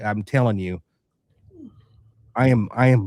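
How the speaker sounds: fighting back tears, choking up, pitch swinging. Podcast host speaking about a man they are proud of, choking up. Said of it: "I don't want to tear up".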